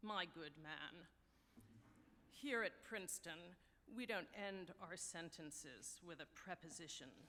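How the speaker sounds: low, snooty tone dripping with haughty condescension. Telling a joke, the professor answers a young man's question; mock-condescending professor. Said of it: "dripping with condescension".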